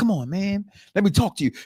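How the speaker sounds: little, small, soft voice. Retelling a wrestling scene, imitating Solo: soft Solo voice. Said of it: "his little soft Solo voice".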